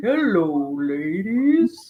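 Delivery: sing-song character voice, pitch swooping widely up and down. Showing how a chat message sounds read in Val Venis's voice. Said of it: "in, like, Val Venus's voice".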